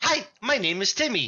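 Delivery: high-pitched voice like a pull-string talking doll. Voicing the talking doll companion, Timmy, to intimidate a dragon: voicing Timmy the talking doll. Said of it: "And Timmy goes".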